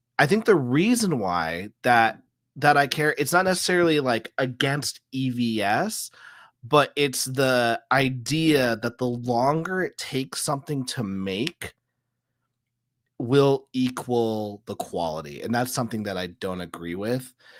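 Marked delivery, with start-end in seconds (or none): 0.2-15.4 very slow, careful, deliberate, thinking-aloud delivery. Working a thought out aloud about why the speaker cares, talking very slowly. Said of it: "I'm talking very slowly so I can like work this thought out".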